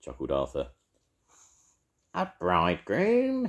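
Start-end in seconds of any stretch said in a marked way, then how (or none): 2.1-3.5 scornful sneering, much higher pitch. Narrator reads a character's retort to another character, sneering. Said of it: "sneered Edna".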